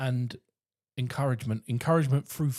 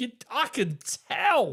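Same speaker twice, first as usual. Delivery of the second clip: acted gushing over-the-top enthusiasm, very high; 11 semitones higher than usual. Retelling praising a child after practice: imitating own over-the-top encouragement. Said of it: "you just have that over the top".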